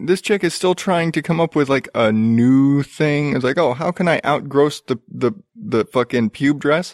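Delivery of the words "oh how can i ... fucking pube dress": normal talking voice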